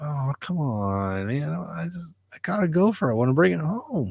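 high, drawn-out, near-crying whimper. Retelling how the dog begged to bring a gopher home: imitating Stumpy whimpering. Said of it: "almost kinda whimpered and cried".

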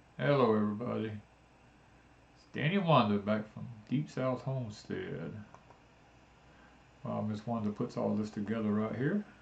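talking softly. Co-host greets everybody at the start of tonight's video, talking softly. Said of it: "And you're talking so soft".

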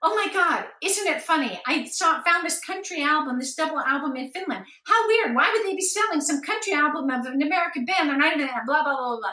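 high, shrieky chatter, very fast. Retelling what they said to a man about an album found in finland, rambling a mile a minute. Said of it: "rambling a mile a minute".

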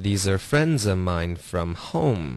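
stress on friends and home. Explaining stress in an English sentence, stress on friends and home. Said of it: "这个重音在friend 就是friends 的这个friend 的这个音节，然后home 也会有重音".

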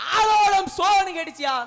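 slow, high, loud calling out.

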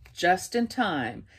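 ordinary delivery

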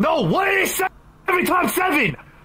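screaming. In a classroom scene, the teacher asks Jeffy a math question again, screaming. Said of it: "Why are you screaming at me?".

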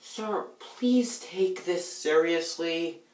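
overly whiny, pleading delivery. Running through takes of a line, this take comes out too whiny. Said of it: "And that was too whiny".

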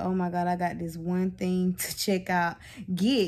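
plain

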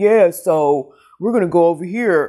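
slow, exaggerated, overdone male voice. Retelling how an audiobook narrator voiced the guy: imitating an exaggerated guy voice. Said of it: "the way she did the guy's voice".

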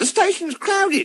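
squeaky small voice, very high. Narrating a story, an engine speaks, squeaking. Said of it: "squeaked Percy".

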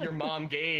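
plain

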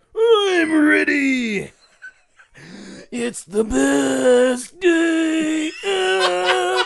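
very high, loud, drawn-out wrestler voice. Playing a cartoon sponge as a wrestler: Macho Man SpongeBob voice. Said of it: "is that Macho Man SpongeBob?".

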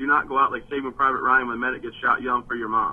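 ordinary talk, nothing marked

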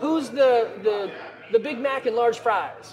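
very slow, stretched, drawn-out calling out, put-on. Retelling a kid calling out orders while customers wait for food, retelling a kid yelling an order. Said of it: "So this kid's yelling out".

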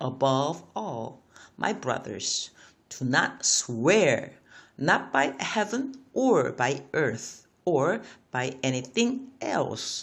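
careful, clear reading with each word set out. Rereading an english verse after noting native pronunciation is fast: read slowly. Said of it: "제가 다시 한번 slowly 해보겠습니다".

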